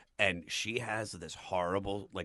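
usual speaking voice

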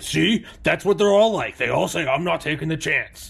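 put-on loud, high demon voice. Acting out what the demons say when they look at you, in a put-on demon voice. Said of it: "I like your demon voice".

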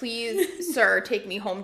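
put-on pleading, begging tone. Retelling almost being left at a seven eleven: retelling own pleading. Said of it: "I just know that I was like".

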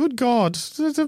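high, stammering mumble in an accent.

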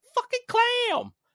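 very high, very loud shrieking freakout. Recalling a Game Grumps playthrough of the clam fight: imitating Arin freaking out. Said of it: "hear him in my head going".

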